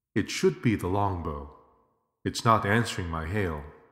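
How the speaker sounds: ordinary delivery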